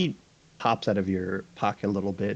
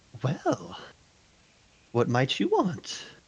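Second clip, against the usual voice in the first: swoopy, high-pitched put-on voice; 9 semitones higher than usual. Voicing the Sugar Diva approaching the player's character: Sugar Diva character voice. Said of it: "the one known as the Sugar Diva approaches you".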